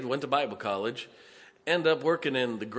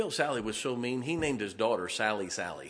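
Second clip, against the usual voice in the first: ordinary talk, nothing marked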